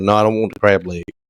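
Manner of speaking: normal talking voice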